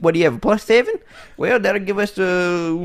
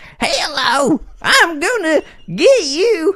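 slow high-pitched goblin voice. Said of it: "do the Goblin King".

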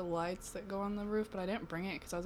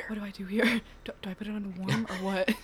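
mock whispering; 8 dB louder than usual. Imitating a friend asking for laundry help: imitating someone whispering. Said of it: "He was, like, whispering".

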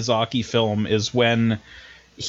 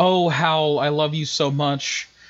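mock swooning, higher; 3 semitones higher than usual. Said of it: "she's kinda just like".

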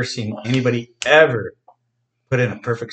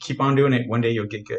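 ordinary delivery

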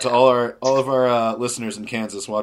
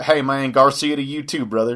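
put-on southern accent, gracias mangled; 3 semitones higher than usual. Showing how to answer "gracias" with a put-on southern accent. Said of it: "put on a southern accent and just talk".

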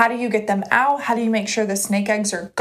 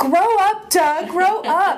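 all-out screaming, high-pitched and drawn out; 8 semitones higher, 3 dB louder than usual. Acting out a man in a funny video yelling at doug, retelling someone screaming. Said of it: "And he's like screaming".

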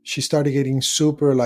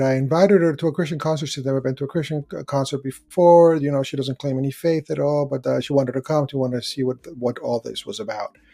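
ordinary delivery

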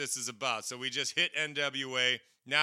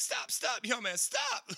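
mock pleading tone, pitched higher; 10 semitones higher than usual. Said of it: "you hear him like".

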